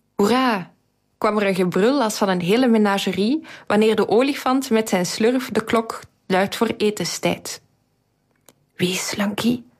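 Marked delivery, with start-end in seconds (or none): 8.8-9.6 hushed whisper. A man asks his companion a question amid a roaring crowd, whispered. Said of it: "fluisterde Tubman toen".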